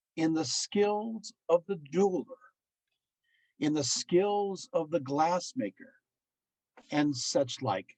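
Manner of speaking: slow, deliberate reading pace. Reading a quoted passage aloud to the audience: slow, deliberate reading. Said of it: "I'm going to go slow".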